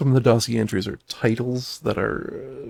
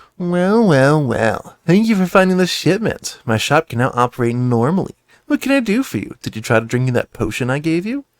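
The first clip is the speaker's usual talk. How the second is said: sassy, nasal, raised voice; 4 semitones higher, 7 dB louder than usual. Reading the shopkeeper Hala's lines aloud, in a sassy nasal Hala voice. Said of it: "she's sassy and she has a, a nasal voice".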